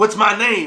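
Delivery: loud, demanding, hit hard. Retelling a movie scene where Shaft smacks a kid: imitating Shaft. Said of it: "And then he goes".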